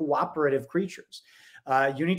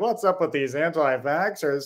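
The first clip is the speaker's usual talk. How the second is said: put-on, smug, self-satisfied newscaster tone; 2 semitones higher than usual. Mocking TV hosts talking about anti-vaxxers: imitating smug TV hosts. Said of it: "their smug faces being like".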